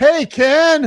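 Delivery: put-on, very high shout carried across a room. Retelling a restaurant worker's greeting at the door: imitating someone shouting. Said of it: "she shouts across the ru-, restaurant".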